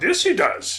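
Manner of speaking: very high, small creature voice, pitched way up. Showing how a green film character talks: Yoda voice. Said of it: "a green guy who talks like".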